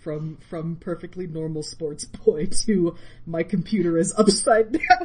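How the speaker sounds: very loud line cracking into laughter. Podcast host teasing a co-host about his character arc, laughing while speaking. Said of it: "I tried to say it without laughing and I couldn't".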